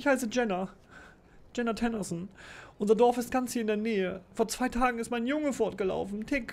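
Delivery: very high, tearful, weeping, pleading voice. A peasant woman begs strangers to find her runaway son, crying. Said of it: "eine Bauersfrau mit Tränen überströmtem Gesicht kommt auf dich zugelaufen".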